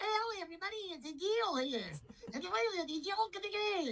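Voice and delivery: very high, tiny talking dog voice.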